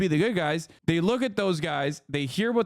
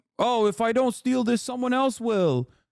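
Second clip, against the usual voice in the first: put-on Brooklyn accent, pitched up; 6 semitones higher than usual. Telling listeners about Jacob, speaker quotes him in a Brooklyn accent. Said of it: "with a fucking Brooklyn accent".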